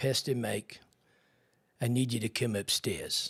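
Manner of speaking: imitated South African English accent. Retelling what a man said when he came downstairs, in his South African English accent. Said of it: "in his beautiful South African slash English accent".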